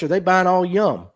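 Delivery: ordinary delivery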